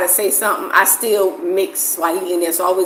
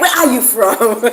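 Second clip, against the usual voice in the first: hard, aggressive, confrontational, demanding tone; 4 semitones higher, 4 dB louder than usual. Retelling how people question the speaker, mimicking aggressive questioning. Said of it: "They say it so aggressively".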